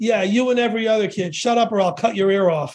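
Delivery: put-on heavy Bronx Italian accent, laid on thick. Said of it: "in his thick Italian Bronx accent".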